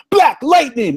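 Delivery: put-on, very high, shrill, loud screaming. Retelling the end of a comedy skit: imitating someone screaming. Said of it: "he starts screaming".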